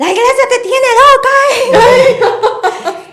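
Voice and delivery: shrill, very high, very loud angry scolding, acted out. Retelling her mother's reply to the apology: imitating angry scolding. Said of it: "Y enojada estaba".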